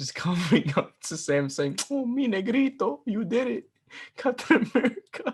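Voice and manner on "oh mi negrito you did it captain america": put-on very high old man voice, Puerto Rican accent. Imagining a scene where an old Chris Evans greets Sam with a Puerto Rican accent. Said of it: "I gave him like a fucking Puerto Rican accent".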